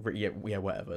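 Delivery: ordinary talk, nothing marked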